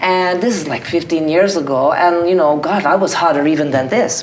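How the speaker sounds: put-on fast, rattled-off, broken-English Russian accent. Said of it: "with your Russian accent".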